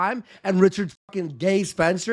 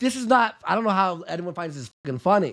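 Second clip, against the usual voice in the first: plain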